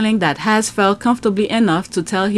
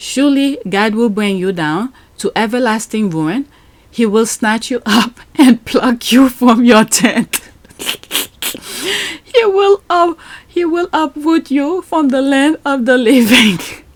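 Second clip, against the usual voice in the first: reading aloud while breaking into laughs; 4 semitones higher than usual. Reading a psalm passage aloud, aimed at two named people: laughing while reading. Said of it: "I'm laughing because it started with a prayer".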